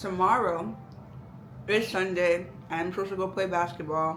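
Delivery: speaking while chewing, mouth full. Giving a personal update, talking while chewing. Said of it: "Sorry, I'm chewing".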